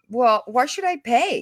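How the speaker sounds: normal talking voice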